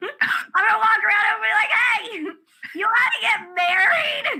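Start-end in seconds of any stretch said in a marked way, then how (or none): 1.7-4.4 silly put-on penguin voice, very slow and shouted. Playing a penguin officiant asking people to marry: penguin voice. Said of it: "I'm gonna talk like this".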